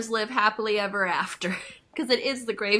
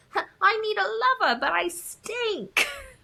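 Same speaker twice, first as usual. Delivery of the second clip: squeaky voice pushed way up high; 12 semitones higher than usual. Describing how a movie character talks, Peppa Pig voice. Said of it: "That's how she talks".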